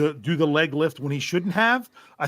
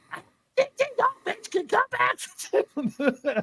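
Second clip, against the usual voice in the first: put-on very high, very slow little girl's voice. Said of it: "the voice I do when it's my daughter".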